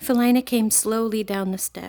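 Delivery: plain reading voice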